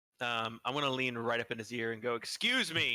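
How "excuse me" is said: sudden, startling, very loud voice close up. A player's character leans into an old character's ear, saying it really loudly. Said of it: "really loudly".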